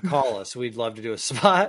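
ordinary talk, nothing marked

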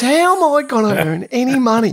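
put-on ranting voice. Retelling a player complaining to his caddy that they can't play: imitating someone ranting. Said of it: "all I could hear him is ranting".

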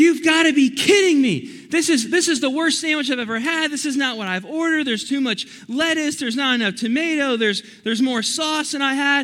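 loud, high, angry ranting yell. Retelling a customer complaining to the cashier, imitating an angry yelling customer. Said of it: "she is mad. / she just starts yelling".

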